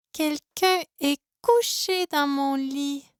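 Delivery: tiny, small little bear voice. Reading a story aloud, voicing the little bear: small bear voice. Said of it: "dit le petit ours de sa petite voix".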